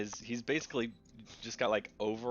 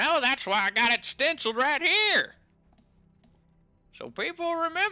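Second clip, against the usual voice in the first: very high-pitched, very loud hollering; 8 dB louder than usual. Voicing a character calling after someone walking away: hollering after someone. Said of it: "He hollers after you".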